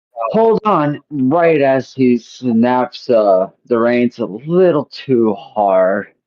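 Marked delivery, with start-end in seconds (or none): 0.3-1.0 very high, excited in-character yell. Voicing an excited character jumping onto a sled: yelling in character. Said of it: "just yells out".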